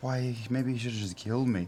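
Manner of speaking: put-on sad sigh. Recalling how they felt the first weeks after that: retelling a sad sigh. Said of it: "(sad sigh)".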